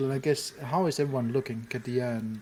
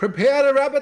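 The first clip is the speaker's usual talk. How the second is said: very high, very loud, shrill yell; 13 semitones higher, 12 dB louder than usual. A player's character answering someone calling from a tower: yelling. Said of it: "I yelled back at him".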